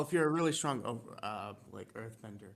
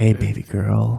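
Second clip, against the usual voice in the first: put-on creepy voice, louder; 2 semitones lower, 16 dB louder than usual. Joining in mocking a friend's voice: mock creepy Roblox voice chat predator voice. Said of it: "minors on Roblox voice chat voice".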